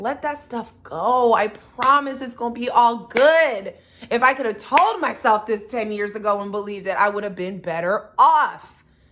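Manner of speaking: loud, full yelling voice. Closing the episode, the speaker addresses listeners directly, yelling. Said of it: "I'm yelling at you now".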